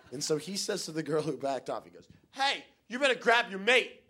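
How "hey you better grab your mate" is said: play-acted heated, irate man's voice, loud and pitched-up. Retelling what an increasingly angry British guy told the girl: imitating an angry British guy. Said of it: "getting angrier and angrier".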